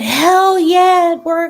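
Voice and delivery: very high, very loud top-of-the-lungs scream. Retelling a phone call's reaction to good news: imitating Erica screaming. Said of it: "she was screaming at the top of her lungs".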